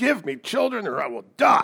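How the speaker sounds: high, furious, frustrated angry shriek. Retelling a demand to Jacob: imitating Rachel screaming in anger. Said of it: "She screams at him in her anger".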